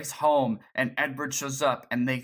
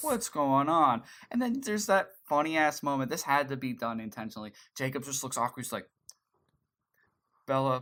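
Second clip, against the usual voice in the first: normal talking voice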